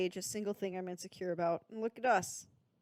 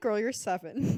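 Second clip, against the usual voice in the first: ordinary talk, nothing marked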